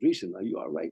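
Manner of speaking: ordinary talk, nothing marked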